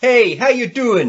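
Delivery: slow, drawn-out delivery. Doing a catchphrase quiz clue for the others: Joey from Friends voice. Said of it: "the clue's in the way I'm saying it".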